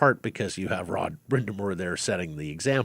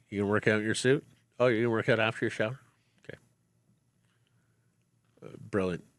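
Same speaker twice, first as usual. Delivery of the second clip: imitated mock-sarcastic tone. Describing coaches who teach with sarcasm, imitating a sarcastic coach. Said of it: "Teach or coach with sarcasm".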